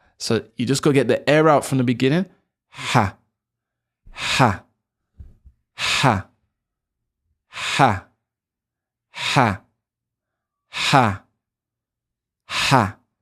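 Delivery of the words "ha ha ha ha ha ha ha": overdone, exaggerated breathy panting throat ha's, very slow. Showing learners the Arabic throat sound: exaggerated breathy ha from the throat. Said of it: "I'm exaggerating".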